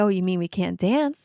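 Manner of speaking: usual speaking voice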